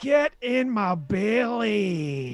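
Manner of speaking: loud, very slow, "belly" drawn out and leaned on. Doing an impression asked for by another speaker: Fat Bastard voice. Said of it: "Mike Myers from".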